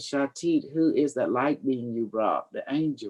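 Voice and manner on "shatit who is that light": ordinary delivery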